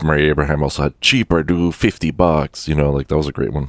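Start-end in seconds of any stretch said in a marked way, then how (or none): 1.0-2.7 put-on Mexican accent. Quoting a great line, the speaker does an F. Murray Abraham impression, Mexican-sounding. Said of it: "That sounded more Mexican, my impression".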